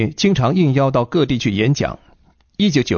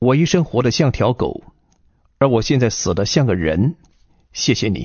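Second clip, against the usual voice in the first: ordinary talk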